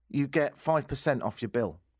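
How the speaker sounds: ordinary talk, nothing marked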